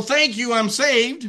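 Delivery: high, complacent tone. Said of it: "you're not gonna go".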